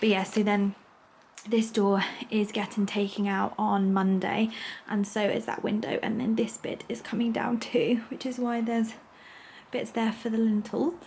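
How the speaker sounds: slight, light whisper. Showing building work in progress, whispering a little so people won't hear. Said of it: "I'm whispering a little bit".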